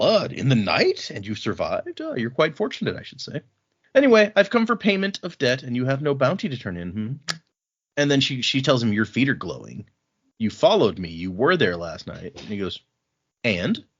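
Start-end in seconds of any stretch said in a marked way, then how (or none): 0.0-7.1 put-on clueless, innocent act in swooping sing-song. Retelling how he answers her accusation of following them: feigning innocence. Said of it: "he pretends like he doesn't know anything".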